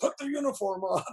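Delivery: high, mumbled mutter under the breath. Retelling Jack Kirby watching a movie screening: imitating him muttering under his breath. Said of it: "just under his breath".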